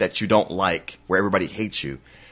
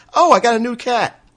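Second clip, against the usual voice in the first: much higher, careless, offhand put-on voice. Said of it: "he'd be like".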